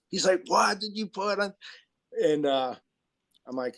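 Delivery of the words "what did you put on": put-on, high, angry, furious screaming. Retelling a man who burst in screaming while the speaker slept, retelling someone screaming. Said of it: "starts screaming at me".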